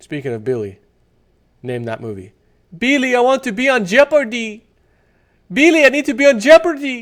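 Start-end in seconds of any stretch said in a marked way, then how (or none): 2.8-7.0 put-on horrible, very high-pitched Puerto Rican woman accent. Quoting a nineties movie line for a name-that-movie game, in a Puerto Rican woman's accent. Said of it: "That's kind of a Puerto Rican woman's accent".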